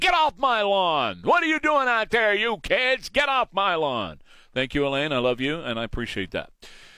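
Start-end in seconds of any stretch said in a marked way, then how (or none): 0.0-4.2 put-on high, crotchety old man hollering. Joking about turning sixty, telling kids off: pretend yelling. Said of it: "I can now officially yell at you".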